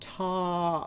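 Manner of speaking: "top" said slowly, stretched out and high. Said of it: "Show me the last sound you hear in top".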